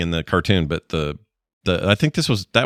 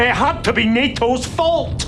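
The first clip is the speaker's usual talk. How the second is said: shrill, very high-pitched cartoon voice. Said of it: "that is Scrooge McDuck".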